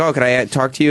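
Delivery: ordinary delivery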